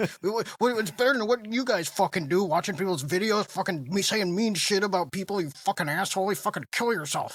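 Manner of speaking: really mad outburst, full of swearing. Mocking a guy who instantly got really mad, imitating his angry rant. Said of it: "he instantly got really mad and he was like".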